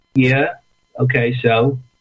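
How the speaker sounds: indifferent, no-big-deal, unimpressed and offhand tone. Retelling father's reaction to a UFO: imitating father's unimpressed tone. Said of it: "looked at it like it was no big deal".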